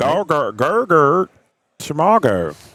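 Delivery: put-on Australian accent. Naming the ability, the speaker says it in an Australian accent. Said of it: "That's my Australian accent".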